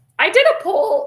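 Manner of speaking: squeaky, cracking high voice. Host talking about running another poll, voice squeaking like a teenage boy. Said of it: "voice squeaking over here like a like a teenage boy".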